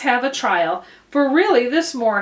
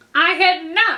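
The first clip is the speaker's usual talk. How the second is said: very angry, sharp, high-pitched outburst; 6 semitones higher than usual. Reading a story aloud, a mouse replying to the girl, sharp and very angry. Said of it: "cried the mouse sharply and very angrily".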